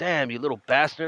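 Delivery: normal talking voice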